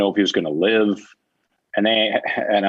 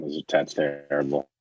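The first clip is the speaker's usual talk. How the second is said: usual speaking voice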